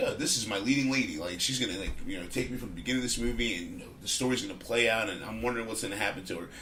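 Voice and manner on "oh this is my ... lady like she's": plain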